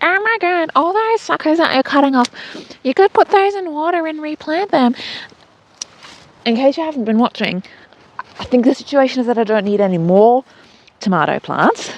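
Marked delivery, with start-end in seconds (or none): 0.0-4.9 put-on, high, loud screaming outburst. Imagining a viewer reacting to the video: imitating a viewer screaming. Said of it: "somebody screaming at the screen".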